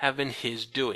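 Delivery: ordinary delivery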